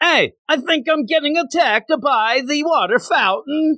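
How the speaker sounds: very high put-on Italian accent, young child voice. Retelling own past words after getting soaked: put-on Italian accent. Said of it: "Italian first grader".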